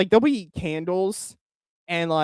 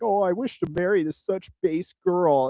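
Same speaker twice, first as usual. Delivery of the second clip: put-on swooning, teasing, over-adoring gushing tone; 3 semitones higher than usual. Retelling a joke reply to a friend's outfit photo: mocking imitation of own post. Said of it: "me making fun of".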